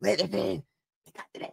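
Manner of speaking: creepy hushed whisper. Breaking off mid-sentence to whisper a line: creepy Joe Biden whisper. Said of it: "creepy Joe Biden whispering".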